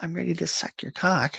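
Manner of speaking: sarcastic, very high, put-on voice. Imitating women in a put-on voice: sarcastic imitation of women. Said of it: "Am I being incredibly sarcastic?".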